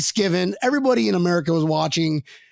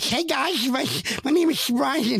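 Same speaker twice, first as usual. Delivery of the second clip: mock, sloppy, slow, slurred drunken speech; 7 semitones higher than usual. Retelling how they talked on the pregame show: imitating own drunk slurring. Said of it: "just slurring every complete word".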